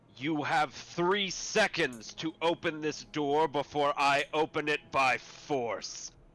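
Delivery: authoritative, threatening tone. Voicing a figure demanding entry at a closed door, authoritative voice. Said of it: "he puts on his authoritative voice".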